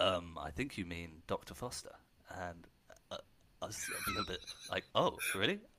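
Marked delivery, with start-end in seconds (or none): 0.0-1.9 mock deadpan delivery, lower and quieter. Recalling someone at a drinks event answering a question about Neale, imitating a deadpan reply. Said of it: "responded with a sort of deadpan".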